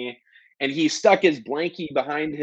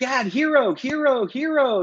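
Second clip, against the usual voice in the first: put-on toddler voice, much higher, slower; 10 semitones higher than usual. Father retelling what his son said getting in the car; 2.5-year-old's little voice. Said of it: "in his like little 2.5-year-old voice".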